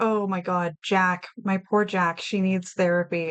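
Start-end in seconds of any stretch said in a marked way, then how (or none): none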